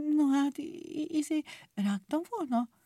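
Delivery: unsure muttering. Caught biting nails, a character answers a friend, in a hesitant mumble. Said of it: "tétován mormogott".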